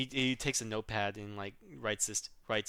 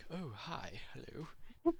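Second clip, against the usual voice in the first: put-on whispered, astute, with a slight British accent; 6 semitones higher, 8 dB quieter than usual. Describing a burly elf man character, the speaker demos his astute, slightly British voice. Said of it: "very astute voice".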